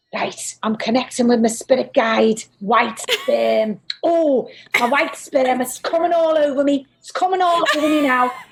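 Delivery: put-on Scouse, Liverpool-accented psychic medium voice. Doing a very brief impression of a man as he comes in, impression of a Liverpool psychic medium. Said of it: "a medium psychic, who's from Liverpool. I'm just do a very brief impression of him".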